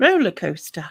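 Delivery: said in a posh-sounding way. Speaker says the word aloud, which a listener then calls posh-sounding. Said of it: "Don't say poshly".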